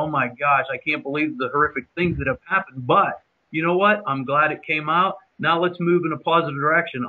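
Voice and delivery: ordinary delivery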